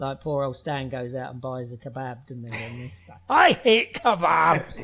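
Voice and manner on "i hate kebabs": put-on very loud, high-pitched, broad-voiced Scottish accent. Recounting a scene from a show being watched, in a Stan impression with Scottish accent. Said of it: "That's a very accurate impression".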